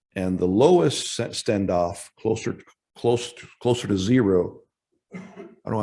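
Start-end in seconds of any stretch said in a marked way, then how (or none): 0.1-4.6 stuttering, halting speech with stumbling restarts. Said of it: "I'm stuttering so much this morning".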